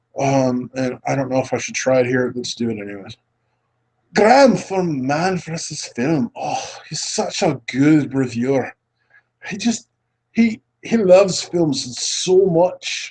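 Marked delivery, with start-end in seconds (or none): 4.1-13.1 bad put-on Scottish accent, slow. Talking about a reviewer from Man versus Film, in a terrible Scottish accent. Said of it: "I'm doing a terrible Scottish accent".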